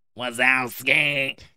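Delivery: put-on monster voice. Doing a quick Roz impression for the co-host: Roz impression. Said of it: "That was pretty good, wasn't it?".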